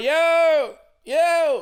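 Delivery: put-on, loud, very high yelling, each "yo" stretched. Speaker recounts yelling a man's name even louder so he hears: retelling a louder yell. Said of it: "So I'm yelling even louder".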